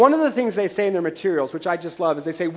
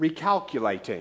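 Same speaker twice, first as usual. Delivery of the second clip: put-on speaking with an Australian accent; 3 semitones lower, 6 dB quieter than usual. Quoting the car GPS voice after a missed turn: Australian accent like Hugh Jackman. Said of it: "Australian accent to sound like the actor Hugh Jackman".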